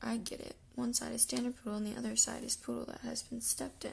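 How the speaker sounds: usual speaking voice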